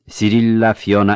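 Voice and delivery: ordinary delivery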